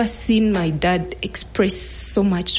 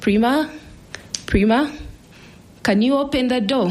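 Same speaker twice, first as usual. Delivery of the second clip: calling out in a higher pitch. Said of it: "called out".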